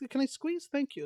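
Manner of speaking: very high-pitched, guessed-at put-on Finnish accent. Acting out a Finnish soldier asking to get into a U-boat: attempted Finnish accent. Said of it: "I don't know how Finnish people sound".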